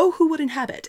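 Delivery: very high-pitched, rushed, rattled off quickly. Describing how an actress delivers a film line, rushing the line like Emma. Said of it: "And she does it really fast".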